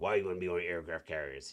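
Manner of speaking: put-on old salty sailor voice. Retelling a father's reply about joining the Navy: imitating an old salty sailor. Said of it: "He's an old salty sailor, so that's how he talked".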